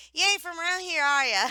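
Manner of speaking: twangy accent. Speaker redoes a phrase the way it should sound, twang accent. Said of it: "without fucking twang".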